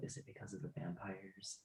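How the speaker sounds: very quiet, hushed whisper. Voicing Geth, who leans in to ask a question, whispering. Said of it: "Geth is gonna lean in and whisper".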